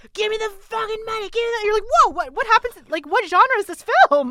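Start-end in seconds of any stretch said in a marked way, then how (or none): 0.1-1.6 jarring, sudden, high-pitched screaming outburst. Describing a jarring scene from The Room: imitating a screaming film character. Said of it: "he's just like screaming like".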